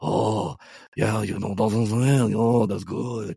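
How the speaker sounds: put-on Korean accent, stoned-sounding. Describing how Korean speakers sound, the speaker imitates a stoned-sounding Korean accent. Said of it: "Korean people sound like they're high".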